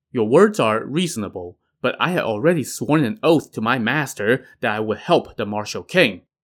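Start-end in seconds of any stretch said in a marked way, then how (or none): none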